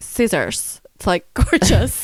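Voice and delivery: slow, stretched-out reality-star style talk. Retelling how the other speaker talked before recording: Kourtney Kardashian voice. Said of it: "she started talking like Kourtney Kardashian".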